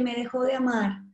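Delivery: ordinary talk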